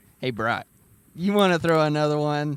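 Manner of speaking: very loud, high teasing jab, laid on thick. Retelling a friend's teasing about throwing another shot: imitating Mike teasing, laying it on thick. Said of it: "laying it thick".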